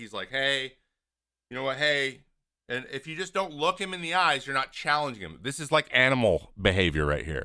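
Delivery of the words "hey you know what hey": play-acted soothing, calming, deferring, placating tone. Voicing one man calming down another who is yelling, mock placating. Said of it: "he's placating".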